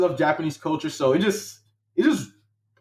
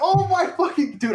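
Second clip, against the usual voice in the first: acted scream, much higher; 13 semitones higher than usual. Recalling opening the acceptance email in the shower, retelling a scream. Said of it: "I start screaming".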